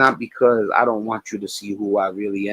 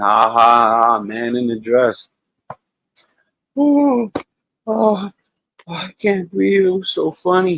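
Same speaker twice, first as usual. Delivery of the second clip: sarcastic, swooping, slow, put-on laugh; 7 semitones higher, 5 dB louder than usual. Mocking a man-in-a-dress joke: sarcastic fake laughing. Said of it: "I can't stop laughing".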